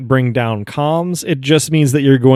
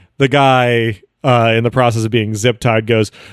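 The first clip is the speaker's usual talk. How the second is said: ordinary talk, nothing marked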